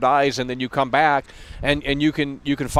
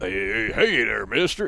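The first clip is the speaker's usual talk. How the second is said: put-on slow, rough, creaky drunken cowboy mumble; 4 semitones higher than usual. Speaker mocks how Arthur Morgan sounds next to John Marston, Arthur Morgan drunk mumble. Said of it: "It just sounds like a drunk fucking mumbler".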